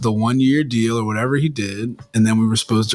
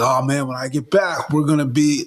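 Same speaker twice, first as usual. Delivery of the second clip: mocking put-on delivery, higher; 4 semitones higher than usual. Mocking how an injured player talks on his podcast: imitating an unrealistic injured player. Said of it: "he talks like he's".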